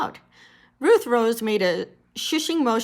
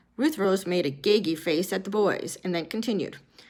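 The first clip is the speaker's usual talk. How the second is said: ordinary delivery, nothing marked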